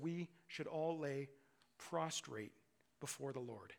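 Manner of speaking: slow, careful, halting, deliberate word-by-word delivery. Quoting Scripture from Revelation to the listeners, said very carefully. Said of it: "I'm going to say it very carefully".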